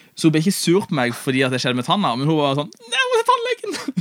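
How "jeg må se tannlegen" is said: very high, drawn-out, terrified, panicked voice. Retelling how his wife reacted after his tooth was hurt, imitating panicked wife. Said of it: "Og helt sånn panikk".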